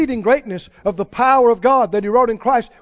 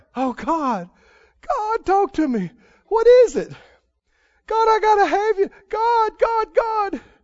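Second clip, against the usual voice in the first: very high-pitched, acted-out weeping; 9 semitones higher than usual. Retelling praying alone in the woods at night: imitating his past crying.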